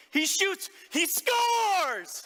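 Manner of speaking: very high, loud, wild scream, drawn out. Retelling cheering when his son scored a goal: retelling own scream. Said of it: "I screamed at the top of my lungs".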